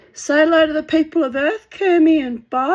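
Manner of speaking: put-on high, loud cooing baby talk.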